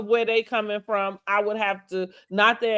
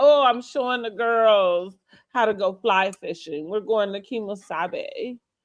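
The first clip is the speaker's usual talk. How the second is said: mocking, snooty socialite voice. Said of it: "She has this air about her that's so snooty".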